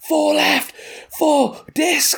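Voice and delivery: play-acted high, rough, stretched-out call. Retelling warning walkers on the path about a thrown disc, retelling a shouted warning. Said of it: "I shouted like about five things".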